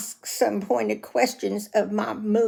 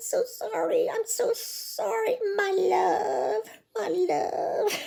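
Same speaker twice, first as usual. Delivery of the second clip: mock very high, slow babying tone, as to small child; 11 semitones higher, 3 dB quieter than usual. Retelling a scene from a show: imitating talking to a child. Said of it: "she's talking to him like he's a child".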